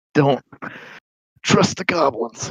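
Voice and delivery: gasped out between breaths, panting and breathless. Voicing a bruised, gagged captive warning the players: panted voice. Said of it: "He does tell you in a panted voice".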